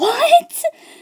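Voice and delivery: high, loud, shocked, disbelieving what. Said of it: "I was just sitting there like".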